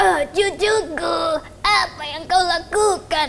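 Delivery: put-on elderly grandmother storyteller voice. Improvising a radio-story scene, a grandmother asks her grandchild what they're doing, in an old grandma voice. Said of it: "Suara nenek-nenek bisa tuh?".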